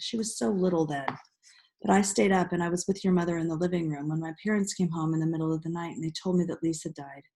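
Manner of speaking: usual speaking voice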